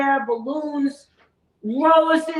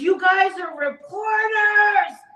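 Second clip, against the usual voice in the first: high, drawn-out, worked-up freak-out; 5 semitones higher than usual. Retelling how a guy reacted to them being reporters, imitating someone freaking out. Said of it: "starts freaking out".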